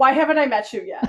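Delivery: loud, playfully indignant, feigned-offended outcry. Retelling a woman who just learned the speaker spins, mock-offended tone. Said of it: "Mock offended tone".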